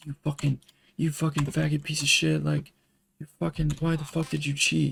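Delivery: livid, high, abusive, furious screaming. Retelling how the whole platoon screamed at them: imitating platoon screaming. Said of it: "the entire platoon is fucking screaming at me".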